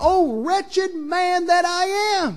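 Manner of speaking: mock very slow, high, sobbing, anguished cry. Retelling how a man down about his sins cried out: re-enacting a cry of agony. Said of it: "he finally cried out in agony".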